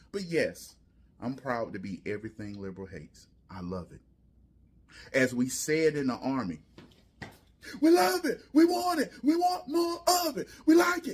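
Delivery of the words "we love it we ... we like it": mock very high, half-hearted, muffled held-back baby yell. Speaker talking back to a critic, in a muffled baby yell. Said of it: "Why are you doing the, the baby yell?".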